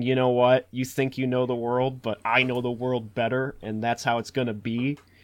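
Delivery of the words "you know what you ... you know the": usual speaking voice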